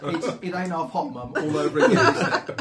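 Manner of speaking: put-on high, loud, laughing sergeant-major bark.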